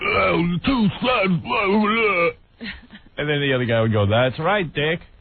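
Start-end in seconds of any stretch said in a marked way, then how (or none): 0.0-2.3 high, slow, goofy voice. Speaker retells how Dick the Bruiser would answer, goofy Dick the Bruiser voice. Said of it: "he talks in a goofy voice".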